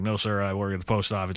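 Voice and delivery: put-on very dry, bone-dry, expressionless deadpan delivery. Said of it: "Like very dry, deadpan Tommy Lee Jones".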